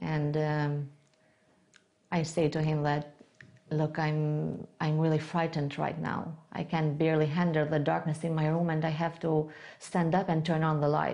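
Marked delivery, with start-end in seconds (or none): none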